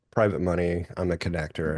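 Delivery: normal talking voice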